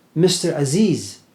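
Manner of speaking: acted, loud, calling-out shout. Retelling how a man called out at a bus stop: imitating someone shouting a name.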